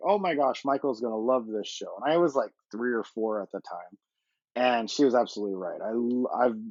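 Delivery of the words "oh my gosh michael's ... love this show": plain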